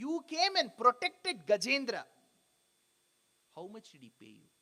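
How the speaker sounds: imitated mock-sarcastic tone. Retelling how Purandaradasa questions Hari: retelling a sarcastic question. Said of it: "very sarcastically asks".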